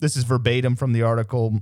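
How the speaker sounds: ordinary delivery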